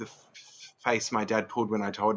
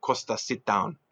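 gentle put-on Greek accent. Retelling how his father stopped him before work: imitating father's Greek accent. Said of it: "said in his sweet Greek accent".

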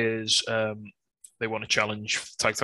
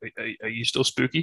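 usual speaking voice

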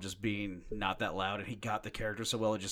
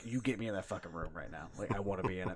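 angry tone, lowered volume; 2 semitones lower, 4 dB quieter than usual. Retelling how Henry Cavill told his agent to get him an audition: imitating Henry Cavill, angry demand. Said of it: "He was that pi-".

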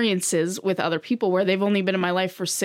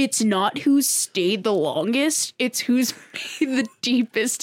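lofty, pretentious, affected, self-important delivery; 4 semitones higher than usual. Repeating a closing quote for the podcast: pretentious voice. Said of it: "In my pretentious voice".

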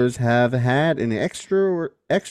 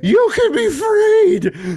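very high, very slow, shrill drawn-out scream; 6 dB louder than usual. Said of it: "Just screaming".

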